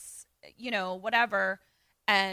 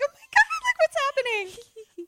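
put-on, very high, swooping, panicky freaking out; 6 dB louder than usual. Retelling how a group reacted to a scare: imitating people freaking out. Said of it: "freaking out".

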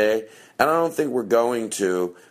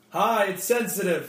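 saying it even louder; 10 semitones higher, 3 dB quieter than usual. Greeting again after being asked a second time to say it louder. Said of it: "Say it louder".

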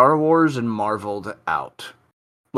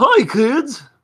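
put-on very high-pitched voice in children's TV show style; 14 semitones higher, 4 dB louder than usual. Asked to do the original Barney, greeting kids in Barney the Dinosaur voice. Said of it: "That was Barney the Dinosaur?".

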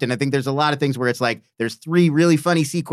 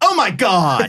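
high, really dramatic outburst; 5 semitones higher, 4 dB louder than usual. Retelling a movie scene's reaction: imitating a really dramatic exclamation. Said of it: "really dramatic".

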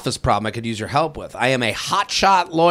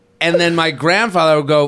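ordinary talk

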